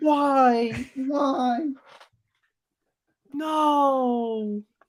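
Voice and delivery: very high, anguished wailing.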